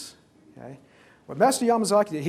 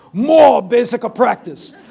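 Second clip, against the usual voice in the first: put-on Japanese accent, higher pitch, louder, slower; 5 semitones higher, 13 dB louder than usual. Retelling the master's reply to his returning student, imitating Master Yamazaki's Japanese accent. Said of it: "got his Japanese accent going as he said".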